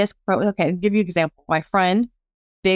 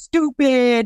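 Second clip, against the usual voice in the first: reenacted yell, higher; 5 semitones higher than usual. Retelling how a man yelled at a woman over pickleball, retelling a yell. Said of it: "He's yelling at her".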